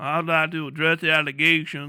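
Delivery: put-on Southern US accent. Talking about accents, a speaker demonstrates a southern accent. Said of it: "If you got one of them southern accents".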